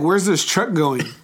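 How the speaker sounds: ordinary delivery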